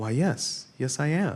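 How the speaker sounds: gentle, kind, compassionate voice, pitched slightly high. Telling of meeting the mom from Leave It to Beaver, imitating Barbara Billingsley's kind voice. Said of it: "in her very compassionate, kind voice says".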